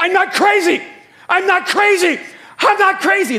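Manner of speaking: panicked, shrill, very high, very loud, drawn-out scream. Retelling panicking at twelve about seeing a psychiatrist: reenacting own past screaming. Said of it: "I started screaming".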